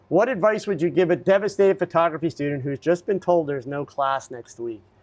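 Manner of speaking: usual speaking voice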